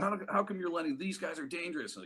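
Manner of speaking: put-on yelling. Retelling how a man at a restaurant yelled at the waitress: imitating someone yelling. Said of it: "he was yelling at the waitress".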